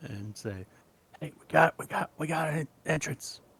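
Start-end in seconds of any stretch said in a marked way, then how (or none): 1.2-3.4 loud, projected whisper. Having quietly slid open a way into the house, telling the others, whisper-yelling. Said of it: "I will kind of whisper, yell".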